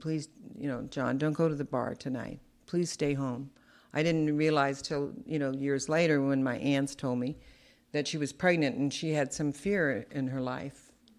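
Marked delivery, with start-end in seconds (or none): 0.0-3.5 put-on tearful pleading, quieter. Retelling a mother's words to the father one night: imitating a crying plea. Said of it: "I remember her crying and asking him".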